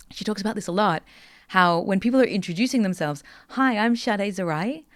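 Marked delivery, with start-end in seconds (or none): 3.4-4.8 question-like rising pitch at end of Zarai. Someone introducing themselves at a meeting: rising end on Zarai. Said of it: "they use uptalk, where everything they say ends in a little bit of an upward inflection".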